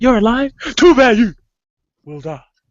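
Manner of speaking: loud, high, shrill, badly acted line reading. Quoting a movie line the speaker calls the best delivery ever: imitating a bad line delivery. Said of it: "truly was that bad".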